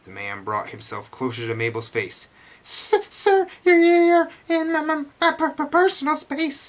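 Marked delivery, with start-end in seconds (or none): 2.6-6.6 strained, struggling, much higher, louder, slower. Mabel, with a man close to her face, tries to speak, strained, struggling. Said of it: "Mabel tried to manage".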